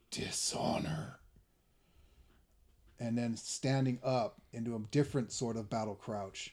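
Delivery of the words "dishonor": snarled, breathy and demonic. Krival looks at the person in front of him, in Krival's demonic snarl. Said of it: "a very demonic sounding voice comes out of Krival's mouth as he looks and just snarls".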